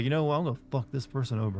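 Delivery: ordinary delivery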